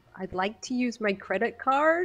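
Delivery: stiff, fake American accent. Asked to repeat a line, the speaker does it in an American accent. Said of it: "in an American accent".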